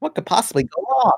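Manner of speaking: animated bobcat character voice. Chatting with Izzy about CalArts applications, slipping into a Bubsy impression. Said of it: "Was that your Bubsy impression?".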